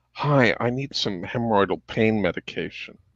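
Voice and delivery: soft, hushed half-whisper under the breath. Retelling asking a pharmacist over the counter for medication, retelling a half-whisper. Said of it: "and I whisper over the counter".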